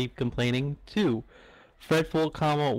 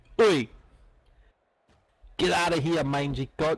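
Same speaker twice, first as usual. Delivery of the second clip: put-on Australian accent on the word oi; 3 semitones higher than usual. Attempting a British accent for the group, it comes out Australian: accent sounding Australian. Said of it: "like an Australian".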